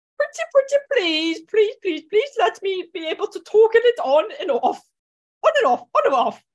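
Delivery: little, high, squeaky voice. Reading out a plea to toggle a feature on and off: squeaky voice. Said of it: "I don't know why I started to be squeaky".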